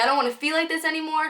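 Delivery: put-on high, frantic, panicked, overwhelmed pleading. Retelling a bad reaction to smoking a joint, retelling panicked screaming. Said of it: "I was screaming at the top of my lungs".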